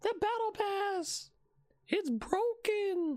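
very high-pitched put-on meme voice. Quoting a TikTok meme mid-conversation, in a high-pitched meme voice. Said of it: "you have to say it in a high-pitched voice".

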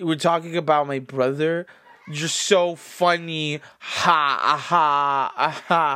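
very slow, put-on, mocking sarcastic fake laugh. Acting out a man's reply to a question about his brother, imitating someone trying to be sarcastic. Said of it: "but like trying to be sarcastic".

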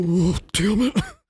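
small, timid, slightly high voice. Retelling how someone gave up and turned tail, in a mock-timid Hank Hill voice. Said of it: "I love your timid Hank Hill voice that you used".

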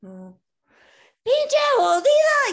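very loud, very high, shrill, swooping Spanish yelling. Retelling how he would react, imitating someone yelling in spanish. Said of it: "He'd start yelling at me in Spanish".

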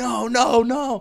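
piercing, shrill, very high-pitched scream. Telling about a friend in the car, retelling his scream. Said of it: "he just starts screaming".

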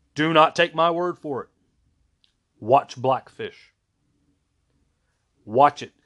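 frustrated, aggravated, exasperated voice. Urging viewers to watch Blackfish, speaking frustrated and aggravated. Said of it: "you guys can hear the frustration and the aggravation".

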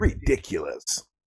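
video game announcer-style voice. Repeating a word on purpose: Halo commentator voice. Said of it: "That was good, man".

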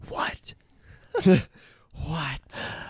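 put-on eager, childlike whispered voice. Retelling a kid whispering back to them: imitating a kid whispering. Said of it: "He starts whispering back".

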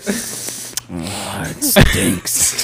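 breathy, spooky, taunting voice. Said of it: "I go right up to his ear".

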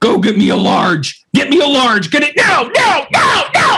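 acted-out, full-panic screaming, high and rising. Retelling an order at a coffee window: imitating own screaming. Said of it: "I was just screaming".

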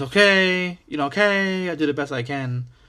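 mock Greek accent, pitched high.

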